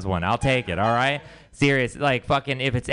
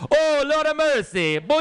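put-on Jamaican patois, pitched up. Retelling a comedian switching accents when a woman charges him on stage; Jamaican patois accent. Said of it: "he switches to a Jamaican patois".

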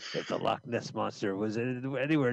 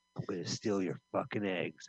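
whispered, hushed, menacing, lower and quieter; 4 semitones lower, 5 dB quieter than usual. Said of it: "you gotta whisper in the ostrich".

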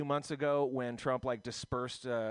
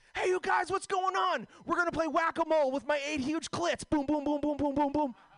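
shrill, very high, loud put-on voice; 5 dB louder than usual. Announcing an impression of Pam Benjamin, then doing it: Pam Benjamin impression. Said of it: "Here's my impression of Pam Benjamin. It goes like this".

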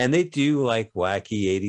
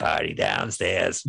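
put-on froggy voice, lower pitch; 3 semitones lower than usual. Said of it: "this guy with a froggy voice goes".

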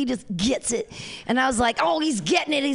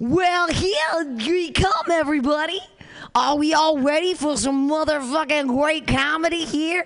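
put-on old-fashioned, old-timey gold-rush prospector voice; 3 semitones higher than usual. Performing a prompt pulled out of a fox for the audience, old-timey voice. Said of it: "use an old-timey voice".

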